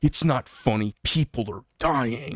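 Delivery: put-on agitated, worked-up voice. Retelling a stranger's reply to a joke about masks: imitating someone worked up. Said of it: "he got really worked up".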